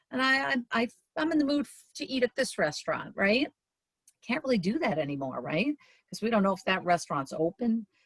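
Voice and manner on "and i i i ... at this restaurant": high, fast, excited, carefree voice. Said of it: "just kinda say".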